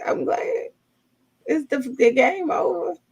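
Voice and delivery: very high voice, fighting off tears. Talking after hearing the team lost by one point, holding back tears. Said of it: "I'm trying not to cry".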